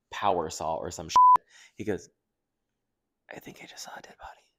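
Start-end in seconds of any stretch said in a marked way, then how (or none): 3.3-4.3 very quiet, breathy, close whisper. Retelling what a friend whispered while standing close: imitating a whisper. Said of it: "And he just whispers".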